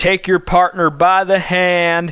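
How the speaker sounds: southern square-dance caller voice. Explaining square dancing, speaker quotes the caller's instruction in a southern accent. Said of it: "always in like a southern accent too".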